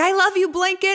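shrill, very high, loud yelling. Retelling a documentary scene of a man feeding a baby, imitating him yelling. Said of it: "he's like yelling".

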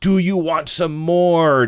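shouting loudly.

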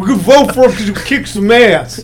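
mock dumb voice, held for the whole line.

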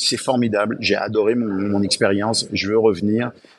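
ordinary delivery

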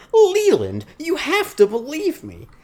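very high, swooping, drawn-out disbelieving squeal. Praising an actress's casting, speaker mimics her: high-pitched incredulous Glenne Headly impression. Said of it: "her super high-pitched voice".

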